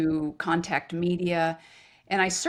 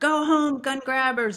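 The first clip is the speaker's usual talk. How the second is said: play-acted high, jeering, heckling yell; 8 semitones higher than usual. Retelling guys in passing pickup trucks at a protest: imitating someone screaming. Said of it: "these guys are screaming out".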